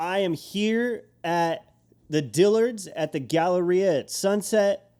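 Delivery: mock vlogger voice. Retelling what a guy recording a vlog said walking up at work: imitating someone talking loudly. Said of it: "he starts like talking really loudly".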